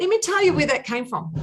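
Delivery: rising excited burst. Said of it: "So I'm getting very excited".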